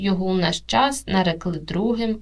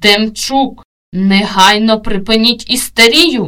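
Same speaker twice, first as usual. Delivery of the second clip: loud, enraged, blurted furious outburst; 9 dB louder than usual. A lecturer loses his temper with a student: furious outburst. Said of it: "уже розлючено випалив".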